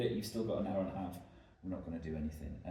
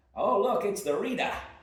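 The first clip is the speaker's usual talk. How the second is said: very high, very loud, bad Boston accent; 13 semitones higher, 10 dB louder than usual. Retelling what a barmaid said on spotting them reading at the bar, horrible Boston accent. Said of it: "sorry for my horrible Bostonian accent".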